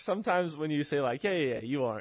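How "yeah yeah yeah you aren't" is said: acted-out heavy sarcasm on the yeahs. Showing how a reassuring reply can come out: imitating a sarcastic reply.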